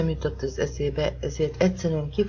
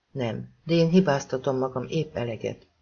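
plain reading voice

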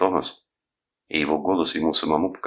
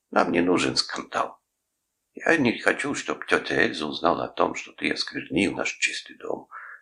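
ordinary delivery, nothing marked

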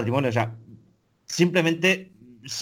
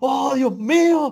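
very high, put-on screaming and crying. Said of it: "gritando y llorando".

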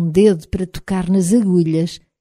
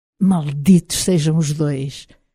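put-on deep, low, menacing, malevolent voice with Scottish accent; 3 semitones lower than usual. Narrator reads a voice speaking from under bedsheets, deep, menacing Scottish accent. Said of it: "disse uma grave e malévola voz com sotaque escocês".

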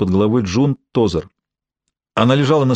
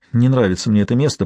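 plain reading voice

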